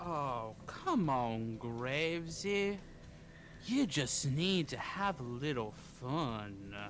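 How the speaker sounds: put-on deep southern accent. Voicing a game character speaking to Graves, deep southern drawl. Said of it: "deep southern drawl".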